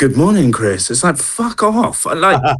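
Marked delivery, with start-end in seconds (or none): 0.0-0.9 put-on voice assistant voice. Mocking a voice assistant greeting the user: imitating Alexa. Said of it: "And she'll go".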